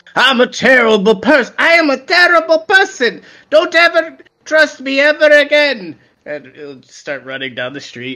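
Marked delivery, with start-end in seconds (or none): 0.1-5.9 very high-pitched, loud yelling in character voice. Playing a character who yells at people while chasing someone: yelling in character. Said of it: "maybe just yelled at some people like".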